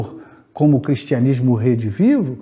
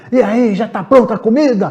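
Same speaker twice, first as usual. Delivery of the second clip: acted, very high, angry yelling; 10 semitones higher, 4 dB louder than usual. Acting out a man who comes home and yells at his wife, retelling a shout. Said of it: "Grita com a esposa".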